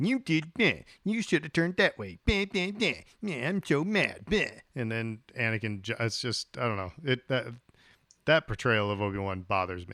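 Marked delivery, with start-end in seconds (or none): 0.0-4.4 put-on scolding voice, pitched higher. Mocking how a film portrays Obi-Wan: imitating Obi-Wan chiding. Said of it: "the way they have Obi-Wan behave here".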